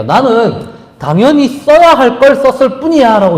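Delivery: high, mocking tone, tossed off lightly.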